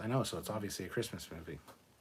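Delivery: fast, sarcastic tone. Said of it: "That's sarcasm, by the way".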